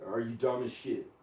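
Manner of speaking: ordinary delivery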